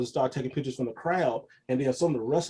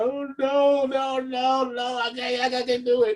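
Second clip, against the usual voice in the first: acted very high-pitched, very slow, near-tears voice; 11 semitones higher, 5 dB louder than usual. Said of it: "I was about to cry".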